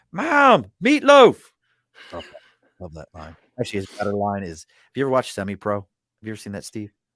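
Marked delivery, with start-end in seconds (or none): 0.2-1.4 shrill, very loud, very high-pitched screaming yell. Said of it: "screaming for my wife to grab".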